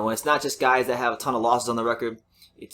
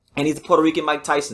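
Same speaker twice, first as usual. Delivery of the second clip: usual speaking voice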